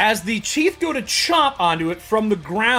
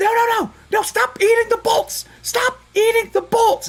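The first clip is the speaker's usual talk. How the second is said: very high, shrill, repeated yelling; 13 semitones higher than usual. Voicing a character yelling from inside a building: yelling in character. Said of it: "And she yells again".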